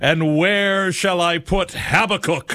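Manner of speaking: put-on roaring, very high-pitched bellowing cry. Retelling how a man tried to wake up a listless audience, in a roaring voice. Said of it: "With a roaring voice".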